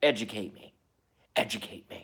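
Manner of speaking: unsettling, creepy, eerie spooky voice. Speaking to viewers of the channel, the speaker uses a creepy voice. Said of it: "the creepy voice".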